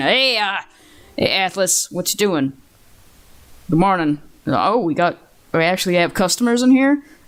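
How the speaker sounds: gruff, rough-edged fantasy dwarf voice. Narrating a scene, the speaker voices a character coming through the door in a gruff voice. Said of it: "a gruff voice saying".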